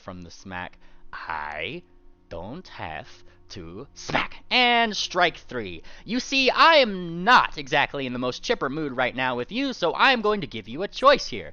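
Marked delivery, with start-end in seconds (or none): 1.1-4.3 restrained, subdued growl, hushed, very slow, drawn out. Narrating a scene, voicing Carrot's reply in a subdued growl. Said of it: "Carrot once again like growl, but more like in a subdued manner".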